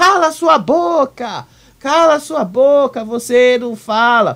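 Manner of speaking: enraged, worked-up yell, high and drawn out. Retelling how an upset participant yelled in an argument: imitating someone shouting. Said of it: "gritou assim".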